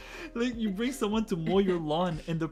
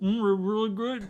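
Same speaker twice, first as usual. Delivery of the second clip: acted muffled talk, mouth full, pitched higher; 3 semitones higher, 4 dB louder than usual. Retelling an answer given with food pushed into the cheeks: acting out talking mouth-full. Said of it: "I put the food like at the back of my cheeks and I'm like".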